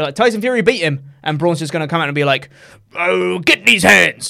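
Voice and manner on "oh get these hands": put-on very slow, loud, rough Somerset-sounding drawl. Imitating the wrestler after his loss: Braun Strowman impression, Somerset-sounding accent. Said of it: "He sounded like he was from Somerset".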